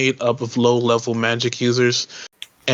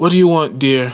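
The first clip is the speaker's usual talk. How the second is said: seductive, come-hither woman's voice, raised pitch; 3 semitones higher, 5 dB louder than usual. Game narrator voicing a woman the player walks up to, sultry woman's voice. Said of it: "in a sultry voice".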